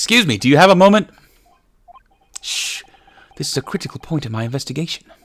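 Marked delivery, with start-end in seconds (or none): 2.4-5.0 whispered, hushed put-on British accent. Playing a character, answering someone who interrupts with 'excuse me', in a british accent. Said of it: "It's my other British accent".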